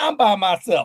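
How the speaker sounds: plain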